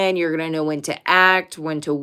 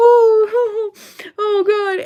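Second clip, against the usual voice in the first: acted, very high-pitched sobbing wail, drawn-out "oh"; 5 dB louder than usual. Describing a witch meme, imitating the woman crying in the background. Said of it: "you hear a woman crying like".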